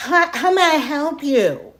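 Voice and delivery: very loud, high, drawn-out voice. Retelling how a person rushed over in a store: imitating someone talking super loud. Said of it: "super loud".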